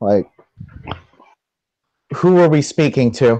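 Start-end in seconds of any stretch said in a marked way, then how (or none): none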